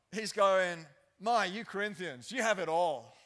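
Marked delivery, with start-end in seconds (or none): 1.1-3.0 mock sarcastic tone, louder. Voicing Paul's words to the Corinthians: imitating Paul being sarcastic. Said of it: "Paul clearly got it too".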